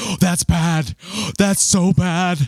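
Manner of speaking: high, slow freaked-out gasp.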